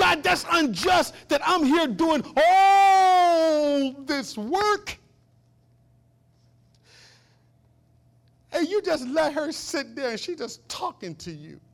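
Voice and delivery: furious, high, loud griping, all stretched out. Retelling the story of Martha and Jesus, imitating Martha's angry complaint. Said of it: "now she gets so mad".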